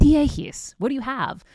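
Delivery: put-on Greek accent. Quoting your mom complaining about her frizzy hair, in her Greek accent. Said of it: "in her Greek accent".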